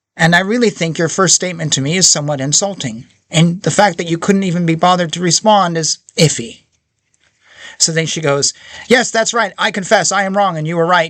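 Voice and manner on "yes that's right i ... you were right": put-on sarcastic tone, higher. Retelling how she answered him: imitating a sarcastic reply. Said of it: "clearly being sarcastic".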